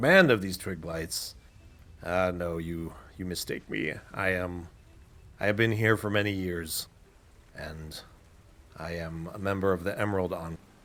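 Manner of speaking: put-on druid voice. Voicing the druid Rydoth, amused at a question: Rydoth voice, laughing a little. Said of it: "He laughs a little bit at that".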